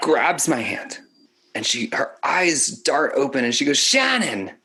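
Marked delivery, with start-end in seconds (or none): 3.8-4.5 put-on pitched-up Philadelphia accent. Retelling how a dying aunt called out a name: imitating aunt in Philadelphia accent. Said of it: "I'm saying it in the Philadelphia dialect".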